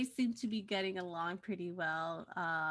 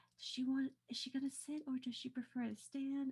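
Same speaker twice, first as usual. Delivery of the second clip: quiet, high, hushed whisper on the side; 5 semitones higher, 7 dB quieter than usual. Having set out extra chairs for company, she turns to Rollin and whispers. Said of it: "and whispers".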